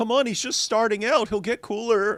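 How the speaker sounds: high-pitched, mocking voice. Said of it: "and they're like".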